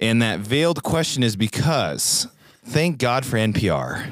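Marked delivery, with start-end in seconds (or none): 2.6-4.0 tongue-in-cheek, sarcastic, facetious tone. Introducing an article from NPR to a co-host: sarcastic. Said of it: "hopefully you can tell I'm being sarcastic".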